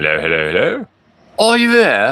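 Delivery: clumsy, bad, sing-song fake British accent. Testing a microphone on a call, speaker slips into a bad British accent. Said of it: "I turn British".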